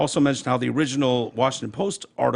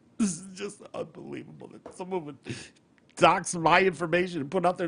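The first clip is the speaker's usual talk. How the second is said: tearful, high-pitched, fake crying sobs; 5 semitones higher, 5 dB quieter than usual. Retelling a reporter's TV interview about being doxxed: mock crying imitating Taylor Lorenz. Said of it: "she starts crying, sobbing, going".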